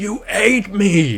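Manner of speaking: mock sudden high, loud shouted outburst. Retelling how a guard's ghost yells at the player: imitating a yell. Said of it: "he just yells out".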